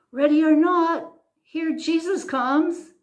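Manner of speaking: put-on, very high, loud herald's cry. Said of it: "only he was shouting".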